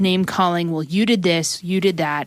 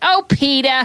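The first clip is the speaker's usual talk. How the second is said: high, exasperated, fed-up cartoon voice; 7 semitones higher, 4 dB louder than usual. Describing how annoyed Lois gets with Peter: Lois from Family Guy voice. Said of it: "Lois on the Family Guy ... she's just like".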